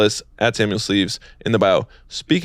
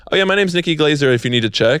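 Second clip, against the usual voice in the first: mock nonchalant, offhand, slightly higher pitch; 6 semitones higher than usual. Retelling what a comedian told security, imitating Nikki Glazer saying it offhandedly. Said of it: "she didn't even say it any type of way".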